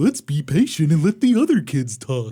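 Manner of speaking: happy, friendly dinosaur character voice. Teasing the other speaker about their imitation, repeating it in a Barney voice. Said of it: "I sound like Barney".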